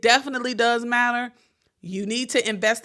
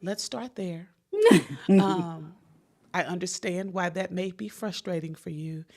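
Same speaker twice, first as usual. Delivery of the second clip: put-on calm, soothing therapist voice, quieter and slower; 3 semitones lower, 4 dB quieter than usual. Retelling how his therapist talked to him, imitating calm therapist voice. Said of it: "He was talking to me in therapist's".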